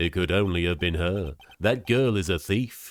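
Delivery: low, silly, taunting, mocking dumb voice. In a drama, a character talks about a girl in a stupid mocking voice. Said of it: "in that stupid voice".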